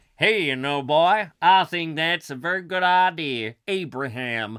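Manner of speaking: put-on sudden, loud American accent. Playing the husband in an improvised scene, agreeing to a name, American accent. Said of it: "Why am I suddenly American?".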